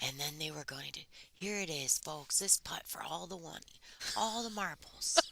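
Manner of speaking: quiet, hushed golf commentator murmur. Explaining what golf voice means to another speaker: hushed golf commentator voice. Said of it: "golf commentators are always like".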